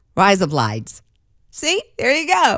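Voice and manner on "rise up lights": quick Australian accent, much lower. Teaching listeners to say a phrase in an australian accent, quick australian accent. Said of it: "say it quickly because I'm teaching you how to speak with an Australian accent".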